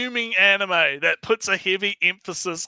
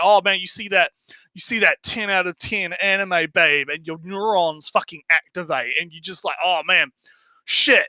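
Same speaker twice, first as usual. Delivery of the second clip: ordinary talk, nothing marked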